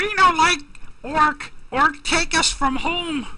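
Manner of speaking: horrible, very high, slow goblin voice. Voicing a goblin speaking to the party: bad goblin voice. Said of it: "that's a horrible, uh, voice for a, for a goblin".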